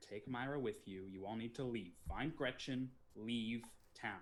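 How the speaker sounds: whispering. Warning two characters to leave before danger arrives: whispering to another character. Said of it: "I whisper to Baron and say".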